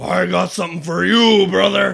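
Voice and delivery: very loud, rough shouted yell, wrestler style. Retelling a story scene where Hogan yells at Wallace: Hulk Hogan yelling. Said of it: "Hogan yells at him".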